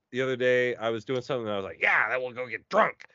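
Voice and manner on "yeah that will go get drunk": put-on dim-witted cartoon teenager style. Describing the voice they use when wanting to do something stupid, Beavis and Butthead voice. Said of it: "I basically go into a Beavis and Butthead voice".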